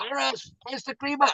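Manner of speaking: gruff, grumpy, very high holler. Retelling a commercial, speaker voices the husband shouting to his wife Doris: retelling a grumpy shout. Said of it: "And he shouts to his wife".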